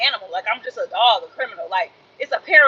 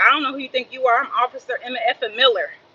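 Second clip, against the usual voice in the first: plain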